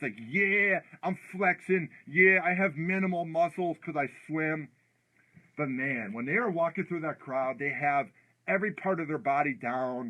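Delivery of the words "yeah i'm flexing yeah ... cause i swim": mock tough-guy swagger voice, acting all tough. Mocking a swimmer walking around like a football player: mocking Ryan Lochte acting tough. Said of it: "he's all tough".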